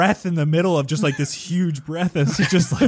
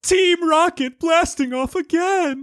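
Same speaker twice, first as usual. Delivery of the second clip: high, pitched-up, declaimed anime villain voice; 11 semitones higher than usual. Trying to get the voice right: Team Rocket voice. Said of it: "What is his voice?".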